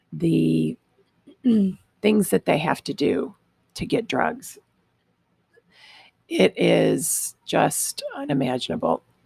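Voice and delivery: voice cracking and breaking. Parent talking about her daughter's addiction, voice cracking. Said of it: "my voice is cracking".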